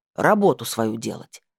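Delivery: grumpy muttering. Reading a story, the right slipper answers the narrator's sad question: grumbling. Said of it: "буркнула правая".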